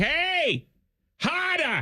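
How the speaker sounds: put-on Boston accent. Imagining the hottest woman suddenly talking like this, Gabby Thomas in Boston accent. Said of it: "all of a sudden sound like".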